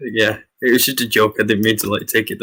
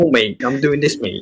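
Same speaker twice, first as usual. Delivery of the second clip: exaggerated, overdone Manchester accent; 4 semitones higher than usual. Told Manc tones come through, showing what they don't sound like: exaggerated Manchester accent. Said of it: "Not like that. Not that bad".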